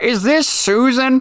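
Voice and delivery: put-on, very high elderly woman voice. Calling back a car warranty service, answering the caller in an old lady voice. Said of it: "I'm doing like an old lady voice".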